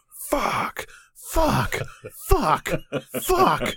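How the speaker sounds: very high, swooping, stretched-out, drawn-out shouting. Stuck behind a slow driver on the road to your house, retelling a shout. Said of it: "I was just sitting there just shouting".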